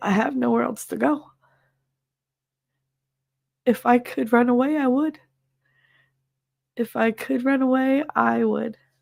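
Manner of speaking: tearful, weeping, crying voice. A streamer speaking to chat, crying. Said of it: "I can't stop crying".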